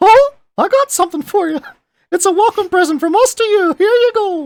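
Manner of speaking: very high, squeaky cartoon voice. Joking about a game perk, saying a line in a Mickey Mouse voice. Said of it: "in a Mickey Mouse voice".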